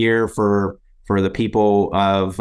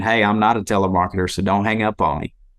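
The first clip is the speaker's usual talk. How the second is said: put-on country East Texas accent. Recalling phoning people swamped by telemarketers, acting out his greeting in a country East Texas accent. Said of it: "with a country ass East Texas accent".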